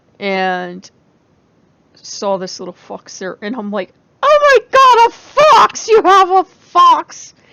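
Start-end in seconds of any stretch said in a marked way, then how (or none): 4.2-7.3 very high, very loud, drawn-out squeal. Retelling seeing a little fox at someone's booth, retelling a high screechy voice. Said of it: "my voice gets really high and screechy like that".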